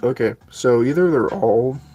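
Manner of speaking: voice cracking on the word all. Realizing the glued book spines are all backwards, voice cracking. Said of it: "My voice just cracked".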